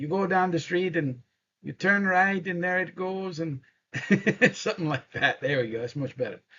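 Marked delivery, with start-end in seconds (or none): 0.0-3.6 put-on Irish brogue, pitched up. Imitating a fellow giving street directions, in an Irish brogue. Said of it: "the fellow with the Irish brogue".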